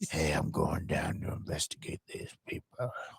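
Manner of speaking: low, breathy, whispered hard-boiled detective voice. Mimicking how a badass private-eye character talks, in a low quiet voice. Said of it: "He talks like this all the time".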